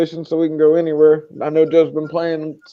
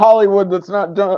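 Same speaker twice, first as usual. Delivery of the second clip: ordinary delivery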